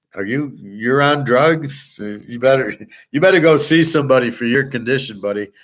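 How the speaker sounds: speaking through laughter. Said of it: "started laughing my ass off, like".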